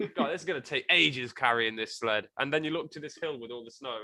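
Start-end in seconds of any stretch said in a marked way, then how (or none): none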